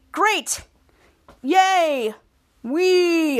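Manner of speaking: angry, sarcastic fake cheer with drawn-out "wee". Speaker acting out a character's reply in a story, mock-angry and sarcastic. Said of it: "and say it angrily, sarcastically".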